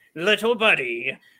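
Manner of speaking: play-by-play sports announcer delivery. Recreating what he had the announcer say in a video game: Jim Houston announcer voice. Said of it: "I had Jim Houston say Little Buddy".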